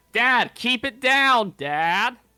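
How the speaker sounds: very loud, high-pitched shouting, yelling. Retelling a daughter yelling back at her shouting dad, imitating Risa yelling back. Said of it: "And she starts yelling back".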